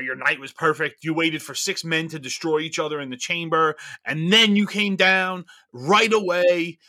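plain

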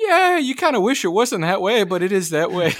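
very high, rising voice, pushed way up. Retelling a talk with Chris Foerster about backups, imitating Chris Foerster, high voice. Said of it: "I like how his voice went up there".

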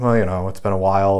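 plain

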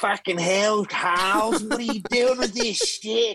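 very high-pitched Australian accent. Describing an Aussie voicing a character: Barnaby Joyce-style Aussie accent. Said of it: "an Aussie doing a Barnaby Joyce. It's an Aussie going like".

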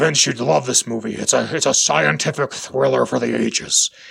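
low, very deep teacher voice. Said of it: "And he's like".

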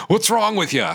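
put-on over-the-top, very high, ridiculous Cockney accent. Retelling how a DVD's narrator ends it, ridiculous Cockney voice. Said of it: "just in that like really ridiculous Cockney voice".

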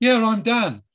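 very high, stunned, starstruck blurt. Speaker retells his reply when a woman knew his name, retelling being starstruck. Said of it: "I was so shocked she knew my name".

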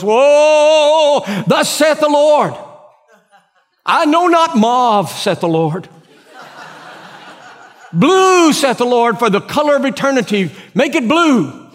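very high, solemn, prophetic tone, drawn-out whoa. Retelling a church woman leaping up over a decision not checked with her, mock spiritual tone. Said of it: "she says in a spiritual tone of voice".

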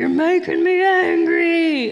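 very slow, loud, blaring, drawn-out talking-toy voice. Retelling what the kids' Hulk toy said when touched, loudest Hulk toy voice. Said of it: "in the loudest voice".

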